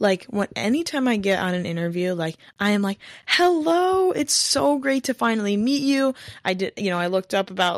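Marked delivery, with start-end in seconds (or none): 3.3-6.1 lively, high-pitched, eager and enthusiastic. Showing how to project enthusiasm in an interview, an enthusiastic greeting. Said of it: "see how my tone changes?".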